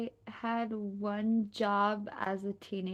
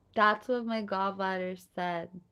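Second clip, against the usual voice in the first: ordinary talk, nothing marked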